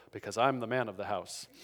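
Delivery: hushed, quiet voice. Retelling his answer to his child about who picks the movie, in a low voice. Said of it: "in a low voice I go".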